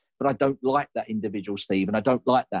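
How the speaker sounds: ordinary talk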